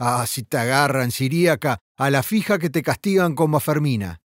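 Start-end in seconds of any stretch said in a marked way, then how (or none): none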